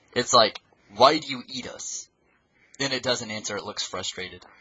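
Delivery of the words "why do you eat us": play-acted slow, angry, pissed-off demanding tone. Retelling a story where a survivor angrily questions a Titan: imitating an angry character. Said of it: "the person gets super pissed".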